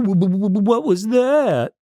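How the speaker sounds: mock very high, teeth-chattering scared voice, drawn-out "what". Recapping an episode, the speaker voices Wilma hearing pounding at the door: imitating Wilma's scared chattering voice. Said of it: "Wilma does like a scaredy cat voice, like chattering teeth".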